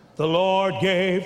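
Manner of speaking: really dark, deep preacher voice. Acting out someone preaching at a funeral, in a real dark, deep voice. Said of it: "Real dark, deep voice".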